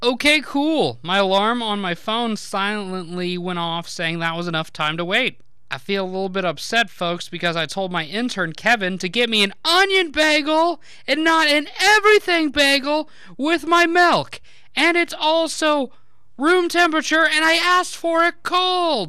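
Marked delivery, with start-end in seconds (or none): 9.0-19.1 high, rising shouted outburst, building as it goes. Speaker addresses the folks, yelling. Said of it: "Sorry for yelling".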